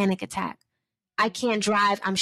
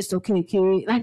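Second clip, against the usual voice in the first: put-on deep baritone voice, slower; 2 semitones lower than usual. Retelling how dad talked them through it on the phone, imitating dad's deep baritone. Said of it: "My dad has this deep baritone".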